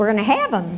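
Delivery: ordinary talk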